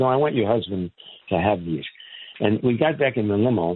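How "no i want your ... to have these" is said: ordinary delivery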